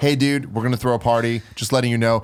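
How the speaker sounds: plain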